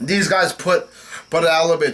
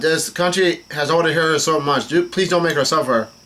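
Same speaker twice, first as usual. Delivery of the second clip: normal talking voice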